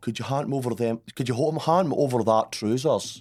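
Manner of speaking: put-on Aberdeen Scottish accent. Retelling what a friend from Aberdeen would say: imitating an Aberdeen accent. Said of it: "they were from Aberdeen, and they would go".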